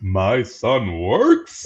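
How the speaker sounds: big showy put-on voice swinging up and down. Quoting a favorite movie line in an impression: James Earl Jones voice. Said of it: "I do a good James Earl".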